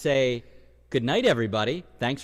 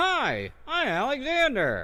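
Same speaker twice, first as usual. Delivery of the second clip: very high-pitched puppet-like dummy voice; 10 semitones higher than usual. Performing ventriloquism with a dummy, introducing itself: Alexander ventriloquist dummy voice. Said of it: "I brought a ventriloquist dummy".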